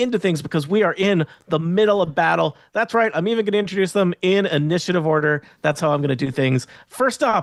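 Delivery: ordinary delivery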